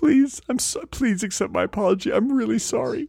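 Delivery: put-on sobbing. Playing a character apologizing to another character, fake crying. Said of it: "Cry it out, crybaby".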